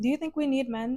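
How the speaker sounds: grave, dead serious, deadpan delivery. Retelling an interview question, imitating the interviewer dead serious. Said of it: "The interviewer was also dead serious".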